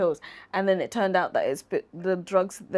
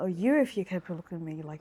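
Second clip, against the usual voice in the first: put-on Irish accent; 4 dB quieter than usual. Repeating Colin's red carpet line after being asked: Colin's accent. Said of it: "With a, with an accent?".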